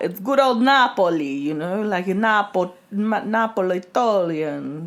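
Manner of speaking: very slow, stumbling put-on Italian accent. Mimicking a listener's attempt at an Italian word: put-on Italian accent. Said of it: "trying to do an Italian accent".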